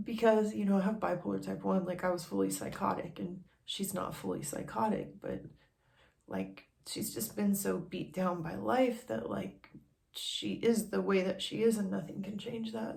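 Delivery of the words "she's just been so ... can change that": emotional, upset voice full of feeling. Opening up about a personal struggle, getting emotional. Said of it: "Sorry for getting all emotional".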